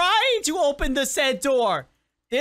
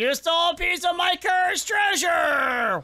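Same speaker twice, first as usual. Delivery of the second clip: put-on pirate captain voice; 2 semitones higher than usual. Voicing a pirate captain met in the game: put-on pirate voice. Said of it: "Hi, pirate dude".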